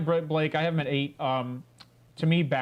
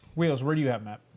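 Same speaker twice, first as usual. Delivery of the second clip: ordinary talk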